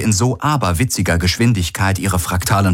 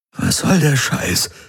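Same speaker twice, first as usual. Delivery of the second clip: croaking voice, pitched up; 7 semitones higher than usual. Garlen faces the apparition of Vago Korak, who should be dead: croaked. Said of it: "Krächzte Garlen".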